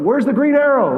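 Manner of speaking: high, loud, playful yell.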